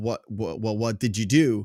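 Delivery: ordinary delivery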